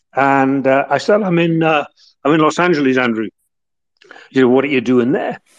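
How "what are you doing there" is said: put-on male northern English accent, faster. Retelling a conversation, the speaker quotes Andrew in Andrew's northern accent. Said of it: "he said to me in his northern accent".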